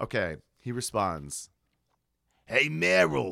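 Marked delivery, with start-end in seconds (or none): 2.5-3.3 put-on New York accent. Reading a man's reply in a scene, New York accent. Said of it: "he does not talk like that".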